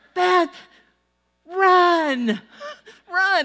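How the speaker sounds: very high, loud, coach-style screaming, stretched out. Retelling how the coach screamed at her during a game: imitating a coach screaming. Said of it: "my coach started screaming".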